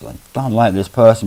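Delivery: ordinary delivery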